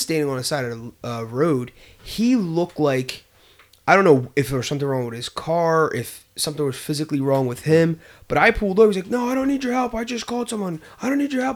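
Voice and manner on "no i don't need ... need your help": put-on panicked, hurried, very high-pitched voice. Retelling an older man on the roadside refusing help: imitating a panicking man. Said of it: "he was, like, panicking".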